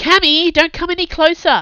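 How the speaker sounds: urgent shout, very high, loud and far-carrying. Kai, standing on the staircase, yells up the stairwell to Cammy. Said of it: "he yelled up the stairwell".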